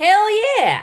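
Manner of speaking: high, loud cheering in a strong Texan accent. Answering a request to give a hell yeah: sounding really texan. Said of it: "That sounded really Texan of you".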